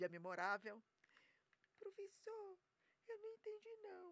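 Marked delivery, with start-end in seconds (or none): 1.8-4.1 very high, soft, small, timid-sounding voice. Retelling how she asked the teacher in class: imitating own old soft voice. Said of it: "Ainda ficava assim".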